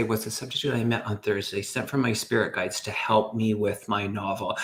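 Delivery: ordinary talk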